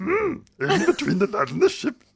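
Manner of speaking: very high, loud, swooping little character voice. Asked whether the quoted passage was Yoda, repeating its last line in a Yoda voice. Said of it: "I didn't do the whole thing in that voice".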